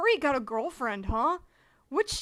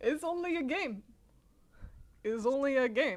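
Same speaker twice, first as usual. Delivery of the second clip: rough, attempted Russian accent; 3 dB quieter than usual. Asked for a voice for a character, the speaker tries a russian accent.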